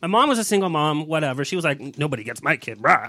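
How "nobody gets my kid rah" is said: low, fierce, protective voice. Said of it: "she actually had that voice".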